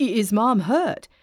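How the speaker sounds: urgent, insistent, nearly choking on the words. On the phone with his mother's neighbor, Quincy demands, nearly choking. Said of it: "Quincy demanded, nearly choking".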